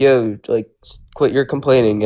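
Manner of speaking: ordinary talk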